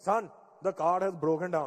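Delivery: imitated Indian accent. Speaker retelling his dad calling about the broken-down car, imitating dad's Indian accent. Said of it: "my dad's Indian accent".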